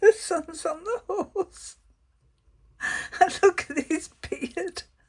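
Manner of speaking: giggling throughout, voice very high. Turning over tarot cards and describing the images, giggling. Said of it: "I'm sorry I keep giggling".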